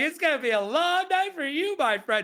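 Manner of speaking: high, smiling, taunting tone. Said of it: "that you say it with a smile".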